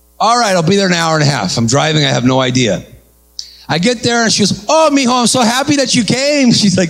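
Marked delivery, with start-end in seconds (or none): 4.7-6.5 cheerful, happy, pitched-up little lady voice.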